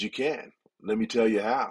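put-on very grave, serious tone. Recounting what he told her, the speaker quotes himself, retelling in a very serious tone. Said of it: "in a very serious tone".

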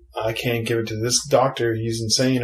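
ordinary delivery

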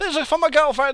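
very loud, frantic, rushed, acted-out outburst. Retelling what he blurted when handing a man his card for tablets, retelling a panicked, rushed blurt. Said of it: "In a sort of panicked, rushed tone".

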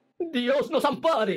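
very high-pitched, panicked cry. The mayor hears a tapping at the council door, panicked shout. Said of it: "gritó el alcalde, lleno de pánico".

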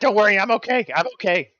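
very high, shrill, loud, reassuring shouted yell. In a tabletop game, a player voices their wounded character yelling to a frightened companion, yelling in Brogan voice. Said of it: "This is my Brogan voice".

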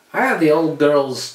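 put-on loud Scottish-accented line. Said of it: "Canadian doing a Scottish accent".

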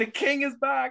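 acted, very high-pitched shriek. Recounting watching the show in the living room, retelling a scream. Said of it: "Like I literally screamed".

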